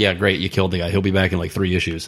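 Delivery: ordinary talk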